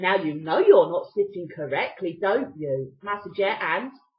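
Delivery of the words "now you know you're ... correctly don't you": low, condescending, patronizing talking-down tone. Recounting a man on the bus remarking on how the speaker sat; retelling a condescending remark. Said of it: "he turns around very condescendingly and says".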